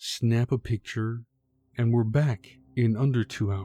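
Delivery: plain reading voice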